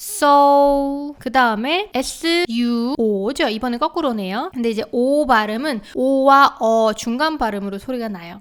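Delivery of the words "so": so held long on a flat, level tone. Pronunciation lesson following a pitch marking, long flat pitch on so. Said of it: "음의 높낮이가 쭉 평평하게 끌어주라고 표시가 되어 있네요. 그러면".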